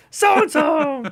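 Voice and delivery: strained high-pitched voice. Quoting a cartoon, trying for a high-pitched voice. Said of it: "I can't get up high there".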